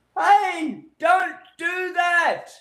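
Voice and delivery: very high-pitched screaming shout. Explaining voice pitch, the speaker demonstrates screaming at someone: high-pitched shout. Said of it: "that's a high pitch".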